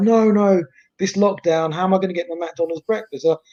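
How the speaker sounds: going mad, ranting and raving. Retelling a friend's voice notes about losing breakfast: imitating Claude ranting. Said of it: "he was ranting and raving on the voice notes".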